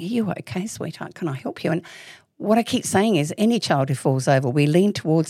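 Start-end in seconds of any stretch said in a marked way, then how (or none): 0.0-1.7 incredibly soft, hushed, comforting voice. Describing how adults talk to a girl who fell, imitating a soft voice. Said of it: "incredibly, you know, soft voice saying".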